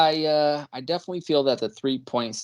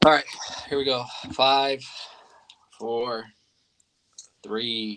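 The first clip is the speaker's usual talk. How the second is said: very slow, grim, doom-laden delivery; 3 semitones lower, 4 dB quieter than usual. A man counts down for the group, then is asked to sound more excited: like counting down his own death. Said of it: "He sounds like he's counting down his own death".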